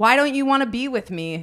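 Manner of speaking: play-acted loud, demanding shout. Retelling yelling at a man on the phone while driving: imitating herself yelling. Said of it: "yelling at this man".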